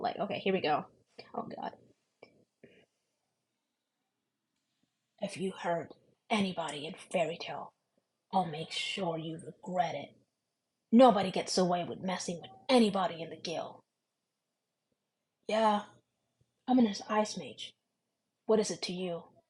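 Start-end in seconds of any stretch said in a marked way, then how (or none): 1.3-19.2 moody, dark, brooding emo anime-style voice. Speaker demonstrates their emo voice, in an emo Gray voice. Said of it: "this is kind of my emo voice".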